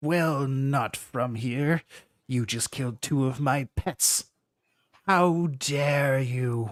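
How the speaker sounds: crackling voice as if over intercom speakers. The ship's voice confronts the humans who killed its pets, in a crackling ship-wide voice. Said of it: "What are you doing on my ship, / Despicable. / It's crackling over the whole ship".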